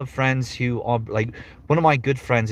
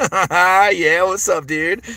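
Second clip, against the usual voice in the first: very slow stoner drawl, pitched up, "yeah" dragged out; 8 semitones higher, 7 dB louder than usual. Showing the character voiced in the show: Bud voice. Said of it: "your typical stoner dude".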